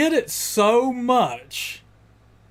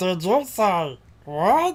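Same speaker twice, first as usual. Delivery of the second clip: slow, drawn-out woodchuck voice. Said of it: "the woodchuck thing that Uncle Joey can do".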